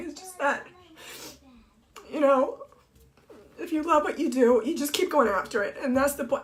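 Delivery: teary, crying voice, speaking through tears. On a Facebook Live, the speaker apologizes for crying and keeps talking through tears. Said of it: "I didn't mean to start crying".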